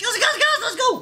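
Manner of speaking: put-on woman's voice, very high and loud. Rallying the girls to go outside, the speaker uses a high-pitched womanly voice. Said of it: "That was my womanly voice".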